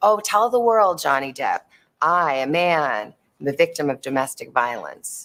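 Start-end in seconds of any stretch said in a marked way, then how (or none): none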